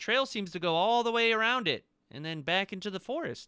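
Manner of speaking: very high, loud call from a distance. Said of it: "he sorta yells back".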